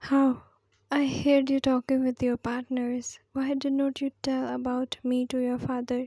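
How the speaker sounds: plain reading voice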